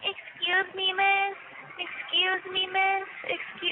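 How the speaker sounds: high, very slow, grating, repetitive nagging voice. Complaining about a new neighbor in the next room: mocking an annoying voice. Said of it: "like that annoying ass voice".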